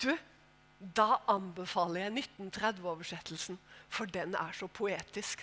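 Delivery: very soft, hushed, refined posh London West End lady voice. Retelling what a woman said to them when asked for a recommendation, posh west-end lady voice. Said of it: "Sånn skikkelig fin vestkantfrue".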